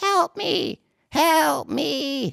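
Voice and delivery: very high, very slow, drawn-out pleading voice. Voicing a telepathic voice heard from the room: telepathic voice crying for help. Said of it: "another different voice coming from out of that room, but it's another telepathic voice".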